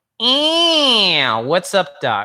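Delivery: bright cartoon rabbit, swooping tune, drawn-out ew. Demonstrating the pharyngeal register for listeners at home, Bugs Bunny impersonation. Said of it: "your best Bugs Bunny impersonation".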